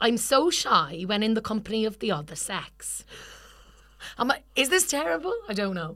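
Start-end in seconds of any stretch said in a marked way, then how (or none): 0.0-3.0 put-on Welsh accent, slower. Reading a script line aloud as asked, in a welsh accent. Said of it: "Do the first line in the Welsh accent".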